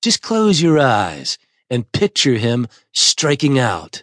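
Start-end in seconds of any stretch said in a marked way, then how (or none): none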